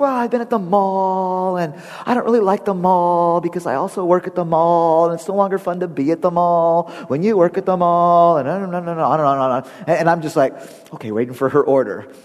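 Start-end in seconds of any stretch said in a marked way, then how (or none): 0.0-8.4 put-on chatty teen girl voice. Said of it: "And she goes".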